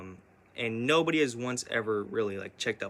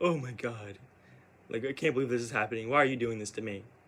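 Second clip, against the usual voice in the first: put-on tearful, pleading voice. Retelling what she said after the coffee exploded: imitating someone tearing up. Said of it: "she started to tear up a little bit".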